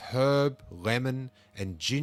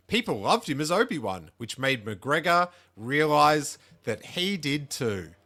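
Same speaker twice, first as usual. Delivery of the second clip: dry, sarcastic delivery; 4 semitones higher, 4 dB louder than usual. Narrating a story about an actor's career, in a sarcastic tone. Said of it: "I say that in a real sarcastic tone".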